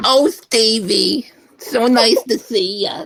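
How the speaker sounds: put-on old woman voice with Yiddish-inflected accent. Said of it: "She's like".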